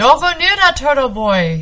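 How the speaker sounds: loud, high-pitched shout. The fisherman, lunging at a boy running toward the turtle, shouted. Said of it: "he shouted".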